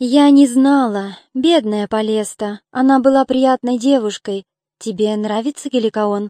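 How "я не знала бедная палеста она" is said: usual speaking voice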